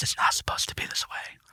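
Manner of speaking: soothing, calming masculine voice, near-whispered. Recounting a floating figure seen while lying down, imitating a calming masculine voice. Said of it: "in a very calming, like masculine voice".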